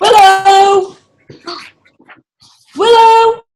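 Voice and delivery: calling out loudly. Calling out to someone after being told to shout for her: shouting a name. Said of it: "shout her".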